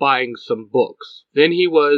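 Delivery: plain reading voice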